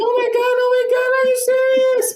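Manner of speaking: mock very high shriek through crying. Retelling the reaction to a surprise proposal: imitating someone crying and screaming. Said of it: "she starts crying and just screaming like".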